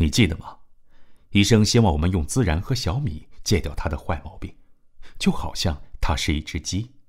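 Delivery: ordinary delivery, nothing marked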